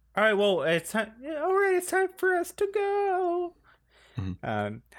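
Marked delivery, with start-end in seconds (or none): 0.1-3.5 very high, squeaky little cartoon voice, "go" drawn out. Acting out a scene, in a Shrek Gingerbread Man voice. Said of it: "I think I sound like the gingerbread man from Shrek".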